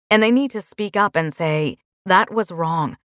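ordinary delivery

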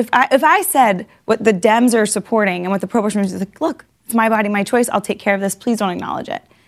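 ordinary talk, nothing marked

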